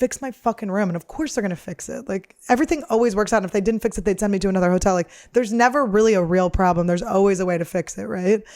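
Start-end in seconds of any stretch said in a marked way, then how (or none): 0.0-0.9 annoyed, irritable, fed-up tone. Speaker retells a problem with a hotel room, retelling being annoyed. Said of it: "I was just like fucking annoyed".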